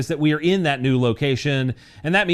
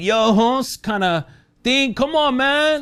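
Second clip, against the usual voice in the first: bad put-on Mexican accent, high and slow; 9 semitones higher than usual. Reading gun industry news, the speaker jokes in a bad Mexican accent. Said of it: "that was a bad Mexican accent".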